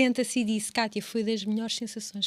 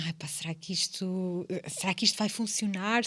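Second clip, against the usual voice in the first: mock nervous, timid, fearful, doubtful wondering; 3 semitones lower than usual. Retelling own first reiki session with a client: imitating own fearful self. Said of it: "e eu a medo".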